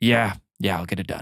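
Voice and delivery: weary, over-it, fed-up resignation. Narrating a scene, the captain answers Emerald, tired and over it. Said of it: "a woman's voice, very angry".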